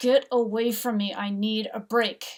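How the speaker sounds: loud, words forced through clenched teeth. Recalling losing their calm tone with those asking things of them, retelling speaking through gritted teeth. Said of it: "I am just gritting my teeth and I'm saying".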